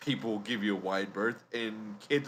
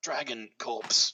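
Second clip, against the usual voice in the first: whispering in a character voice; 2 semitones higher than usual. Asking a tavern keeper for a leather worker, whispering in character. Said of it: "kinda turns around and kinda whispers".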